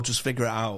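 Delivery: ordinary delivery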